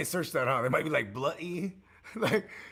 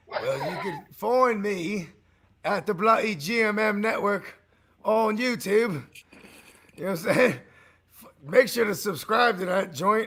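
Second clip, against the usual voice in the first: slow, affected, put-on British accent; 3 semitones higher, 3 dB louder than usual. Giving out where to find the network online, affected British accent. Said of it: "I don't know why I affected a, like, a British accent".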